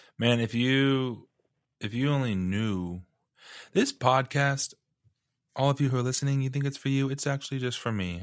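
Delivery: holding back tears. Host speaking to listeners after a guest's words moved them, holding back tears. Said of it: "I'm trying not to cry".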